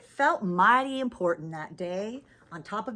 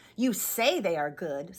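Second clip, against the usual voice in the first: scornful, doubting sneer in a bear voice; 6 semitones lower than usual. The bear answers the rabbit who boasts of its ears, with a sneer. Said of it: "said the bear with a sneer".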